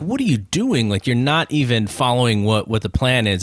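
normal talking voice

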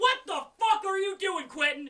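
put-on very high, shrill, outraged old neighbor shout. Acting out a neighbor woken by a screaming runner: acting an angry old neighbor. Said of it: "One angry old neighbor comes out his door".

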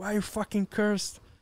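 mock yelling. Retelling yelling back at him while editing: imitating own past yelling. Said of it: "yelling at him back".

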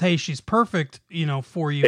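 ordinary delivery

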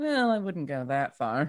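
soft, quiet, hushed murmur. Murmuring just loud enough for the group to hear, quiet murmur. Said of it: "murmured just quietly enough so my group can hear".

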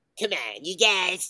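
very high, loud, slow, drawn-out voice. Answering a request to hear the Cartman voice: Eric Cartman voice. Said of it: "Can we hear your Cartman?".

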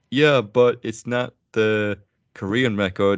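heavy sarcasm, slow and drawn out. Retelling a line said with other guys: imitating a sarcastic remark.

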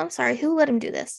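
normal talking voice

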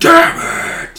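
spooky, ghost-like yelling.

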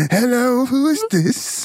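old man's voice with fake British accent. Answering a call as Grizzly, Grizzly voice with fake British accent. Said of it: "Sounds like an 80-year-old Grizzly that's from London".

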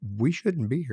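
usual speaking voice

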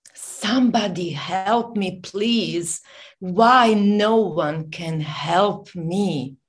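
acted crying, tearful yelling. Retelling when they cried out to God, reenacting crying for help. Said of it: "I was crying and, and yelling".

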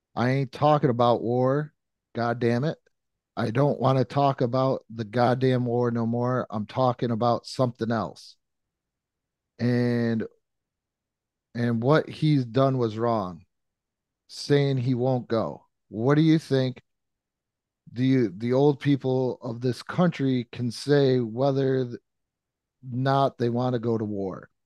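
normal talking voice

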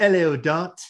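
put-on almost Cockney accent. Speaker voices a character arriving on cue, almost cockney accent. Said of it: "Almost sounded cockney".

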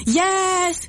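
yes called out at a high pitch.

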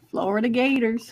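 Southern accent. Naming the next game to look at: Southern accent. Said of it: "That's [name]'s Southern accent".

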